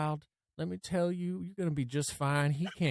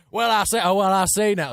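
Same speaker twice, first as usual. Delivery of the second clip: put-on cartoon rooster voice, higher and louder; 5 semitones higher, 10 dB louder than usual. Doing a requested voice in a game: Foghorn Leghorn voice. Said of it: "Foghorn Leghorn".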